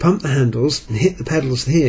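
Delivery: ordinary delivery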